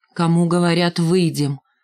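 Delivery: ordinary delivery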